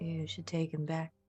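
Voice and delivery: barely audible, very quiet, low voice. Speaking in character, telling another player to take him back: very low voice. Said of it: "in, like, a very low voice".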